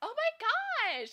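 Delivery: put-on very high gushing Valley Girl voice, drawn-out "my". Showing how they interpreted a comment about their voice, Valley Girl voice. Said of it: "like like a Valley Girl kind of thing".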